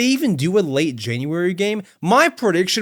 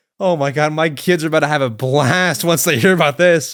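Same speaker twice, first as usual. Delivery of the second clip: ordinary delivery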